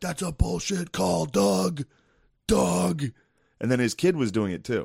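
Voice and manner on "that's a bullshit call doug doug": mock very slow, high, raspy, rough, stretched-out scream. Complaining about a man yelling beside them every play, imitating his screaming. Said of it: "right next to me screaming every play".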